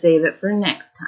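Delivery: ordinary talk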